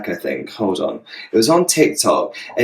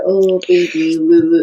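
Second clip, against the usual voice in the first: put-on slow, drawn-out, pitched-up cooing baby voice; 6 semitones higher than usual. Imitating the voice of the boyfriend in the video: imitating a baby voice. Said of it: "That's the baby voice".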